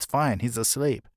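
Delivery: normal talking voice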